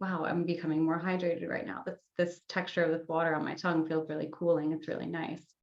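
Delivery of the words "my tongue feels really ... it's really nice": ordinary talk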